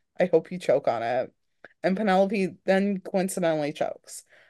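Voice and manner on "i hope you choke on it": mock muttering under breath, lower pitch. Speaker retells Freya's remark as Penelope takes an order, retelling a muttered aside. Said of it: "Freya mutters under her breath".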